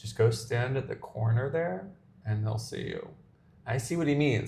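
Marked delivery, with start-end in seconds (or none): 0.0-3.1 quiet, muttered aside under the breath. Retelling a tip another person in the airport gave: imitating a muttered aside. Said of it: "under his breath".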